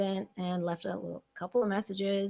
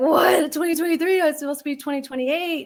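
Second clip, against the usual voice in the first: high, fake panic with words tumbling out; 8 semitones higher, 10 dB louder than usual. Retelling a reaction to news of an early parole hearing: retelling own panicked reaction. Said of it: "So I'm panicking".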